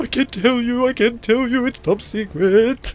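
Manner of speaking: very high, slow, drawn-out pleading mumble. Voicing a captured figure held by the throat: begging and mumbling. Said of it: "begging and mumbling".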